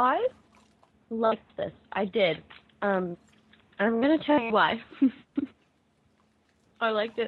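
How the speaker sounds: speaking around candy in mouth. Panelist asked for thoughts on a performance, talking while eating candy. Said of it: "I'm sorry, I'm eating a lifesaver".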